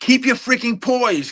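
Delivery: play-acted very high-pitched angry yelling outburst. Retelling how a coach shouts at a player: imitating a coach yelling. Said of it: "they're yelling".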